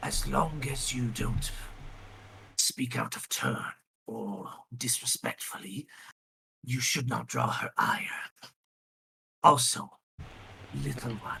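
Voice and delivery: soft, hushed, quiet whisper. Narrating a character who sits closer as the guards close the doors, whispering quietly. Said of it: "he whispers quietly".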